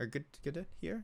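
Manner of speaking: good to hear with a doubtful upward rise on hear. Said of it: "No, see?".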